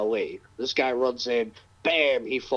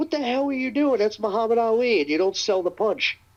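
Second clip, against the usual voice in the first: shrill, very high, screaming scolding tone; 10 semitones higher than usual. Retelling how a promoter got in someone's face: imitating someone screaming. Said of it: "screamed at him".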